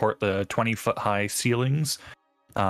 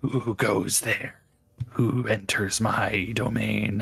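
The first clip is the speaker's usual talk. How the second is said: weird, small, gravelly cackling voice. Describing a voice heard in the mind, weird cackling gravelly little voice. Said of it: "this weird like cackling like gravelly little like".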